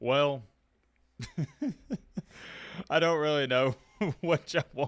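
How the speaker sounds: talking through laughter. Reacting to news that a player flipped his commitment, laughing while talking. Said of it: "I don't know why I'm laughing".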